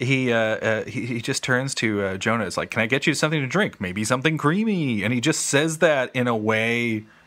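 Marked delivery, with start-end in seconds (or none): 2.7-5.0 sleazy game-show host voice. Retelling a robot character's offer of a drink: imitating sleazy Tom Servo. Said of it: "He sounds a little bit like a game show host".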